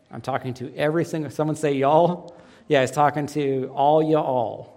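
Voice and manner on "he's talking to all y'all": slow, easy, stretched put-on Texan drawl. Explaining that Jesus is talking to everyone, say it in a Texan accent. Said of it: "That's about as good as my Texan accent gets".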